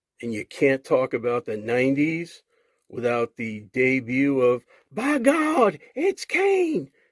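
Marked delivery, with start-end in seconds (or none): 4.9-6.9 very high, slow, stretched-out call swooping up high. Recalling a wrestler's debut, doing a horrible Jim Ross impression. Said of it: "that was a horrible Jim Ross impression".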